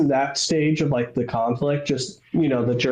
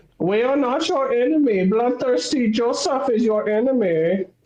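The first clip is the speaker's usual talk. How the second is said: high, cartoonish comic-book German accent; 9 semitones higher than usual. Mimicking propaganda aimed at the Red Army, in a comic-book German accent. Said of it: "comic booky, like German accent".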